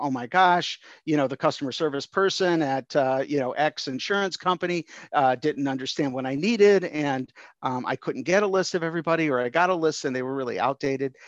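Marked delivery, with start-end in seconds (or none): none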